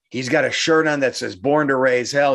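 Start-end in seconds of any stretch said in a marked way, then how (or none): none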